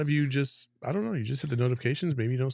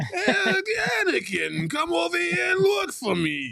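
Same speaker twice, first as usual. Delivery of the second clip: very high-pitched, fat-sounding alien voice; 3 dB louder than usual. Showing what their accent sounds like, a speaker does the fat Star Wars junkyard alien voice. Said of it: "sound like that fat alien off of Star Wars that's in the junkyard".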